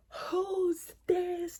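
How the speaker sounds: put-on high, frightened, alarmed scream. Telling a story where her screaming wakes his dad, retelling a scream. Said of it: "So she starts screaming".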